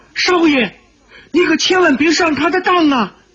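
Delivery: woman's very high calling out. A narrator reads a woman's cry to the young master from the doorway: calling out. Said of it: "一个女子的声音叫道".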